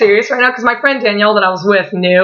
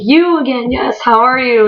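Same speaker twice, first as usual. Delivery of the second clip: mock delighted, excited, eager burst; 4 semitones higher than usual. Retelling how he stops, points and greets the speaker: imitating him excitedly. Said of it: "And he's all excited".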